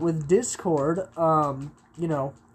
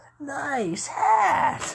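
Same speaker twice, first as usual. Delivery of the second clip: very high, cartoony bony-creature voice; 9 semitones higher than usual. Showing off a voice they can keep up, the speaker does the Legend of Zelda skeleton voice. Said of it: "the skeleton from like the old Legend of Zelda cartoon".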